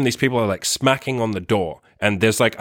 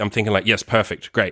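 ordinary talk, nothing marked

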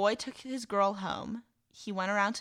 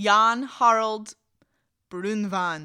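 loud put-on Scandinavian accent, belted out; 9 dB louder than usual. Telling where a legend came from, naming the folklorist in a Scandinavian accent. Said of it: "That was such a good accent".

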